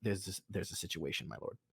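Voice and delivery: hushed low whisper. Game master voicing Orton, who comes down to the player: Orton whispering. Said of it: "And Orton comes down and whispers to you".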